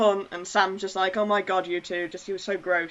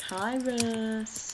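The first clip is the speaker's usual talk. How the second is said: eerie, creepy voice with words drawn out; 3 semitones higher, 7 dB quieter than usual. Greeting a listener who is listening right now: put-on creepy voice. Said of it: "can I do my creepy thing again?".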